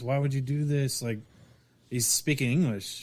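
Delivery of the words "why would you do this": put-on sobbing and weeping through the words. Retelling a video game father's crying words, imitating someone crying. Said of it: "and he's crying".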